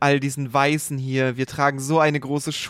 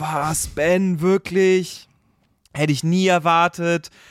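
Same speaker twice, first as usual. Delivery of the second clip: put-on, slow, stunned, can't-believe-it astonishment; 4 semitones higher than usual. Retelling a scene where Leland hears a suspect was arrested for his daughter's murder, mock disbelief. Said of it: "kann es natürlich überhaupt nicht fassen".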